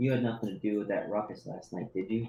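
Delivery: hushed, low, close-up half-whisper. Narrating a woman who pulls the listener close, half-whispering in his ear. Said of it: "she's gonna whisper in your ear".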